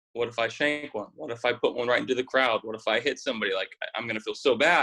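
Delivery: ordinary talk, nothing marked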